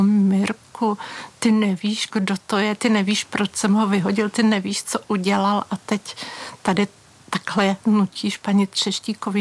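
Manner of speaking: ordinary talk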